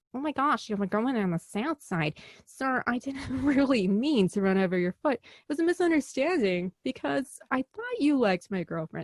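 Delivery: slow, apologetic, sorry-sounding put-on Chicago accent. Comparing New York and Chicago taxi drivers, playing the Chicago one as a mock-apologetic Chicago guy. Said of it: "And he's apologetic".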